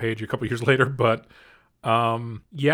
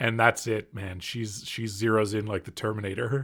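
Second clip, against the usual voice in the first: ordinary talk, nothing marked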